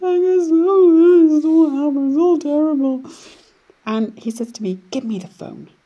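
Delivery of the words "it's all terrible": acted-out crying, much higher, louder, slower. Retelling a phone call to a husband: re-enacting crying on the phone. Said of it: "and I'm crying on the phone".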